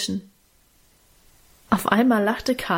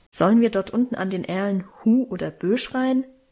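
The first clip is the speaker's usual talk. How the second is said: ordinary delivery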